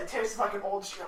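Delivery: plain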